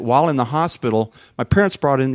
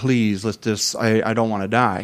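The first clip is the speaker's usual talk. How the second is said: mock pleading, begging tone; 2 semitones lower than usual. Recalling waiting with their dad for the oncologist, retelling a plea. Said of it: "I'm just begging".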